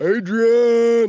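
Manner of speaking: booming, high, drawn-out loud yell. Adding a third word to the impression: Rocky impression. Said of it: "Rocky impression".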